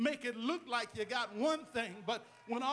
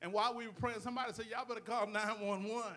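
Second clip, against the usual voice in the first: ordinary delivery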